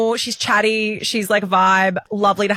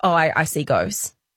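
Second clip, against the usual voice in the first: put-on low, dry, matter-of-fact deadpan delivery; 6 semitones lower than usual. Retelling what a woman in the office said, fully straight-faced: retelling her deadpan line. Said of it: "And she deadpan was like".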